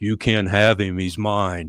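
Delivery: throaty, guttural voice. Retelling what a man said when the other voice came back, retelling a guttural voice. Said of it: "this guttural voice comes back".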